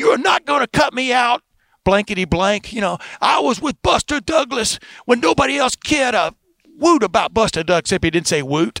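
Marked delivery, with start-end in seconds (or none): 0.0-7.8 put-on boxing announcer voice, screaming, higher. Retelling a boxing promoter refusing to be cut out: imitating Don King screaming. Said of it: "just starts screaming".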